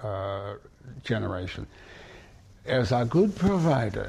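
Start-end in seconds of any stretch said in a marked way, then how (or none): 2.6-4.1 put-on Yiddish accent, done as best possible. Quoting the old folks of grandfather's generation: Yiddish accent. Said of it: "that's the best I can do with a Yiddish accent".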